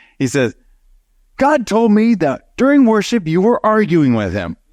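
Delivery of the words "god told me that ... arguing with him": high-pitched yelling. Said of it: "and he's yelling at me".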